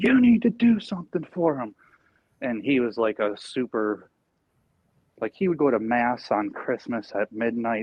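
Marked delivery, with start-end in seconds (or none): 0.0-1.7 high, raised mock scolding yell. Recalling a religious man yelling at the speaker's mom over the holiday, retelling a yell. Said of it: "he's like yelling at my mom".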